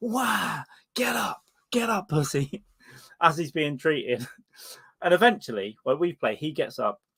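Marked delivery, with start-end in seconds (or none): 0.0-2.6 mock high, drawn-out, jeering, taunting scream. Recalling a friend yelling at an injured player mid-game, retelling a friend's screaming. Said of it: "just screaming at him like".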